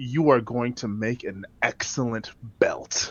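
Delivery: very quiet whisper full of utter disgust. Speaking in character to a creature, looking dead at it: disgusted whisper. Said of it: "I whisper towards it".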